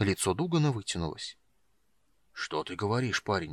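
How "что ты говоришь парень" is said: muttering, much quieter. Narrator reads Dugan responding to the young man's whispered news, muttering. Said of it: "пробормотал он".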